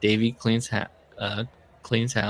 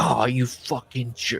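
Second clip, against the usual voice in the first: put-on menacing, aggressive yell. Retelling what he said while on steroids, mock-menacing outburst. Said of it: "I was like actually menacing".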